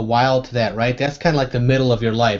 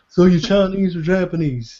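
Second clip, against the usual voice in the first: pitched-up, raised cartoon character voice; 6 semitones higher than usual. Retelling a favorite episode's scene with the neighbors from Laos, as Hank Hill. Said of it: "That's a great Hank Hill".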